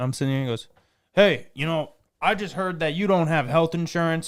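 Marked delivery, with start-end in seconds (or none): 1.1-4.3 serious, stern, scolding tone, pitched up. Retelling a phone call he received, imitating a stern lecture. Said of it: "he gives me this stern talking".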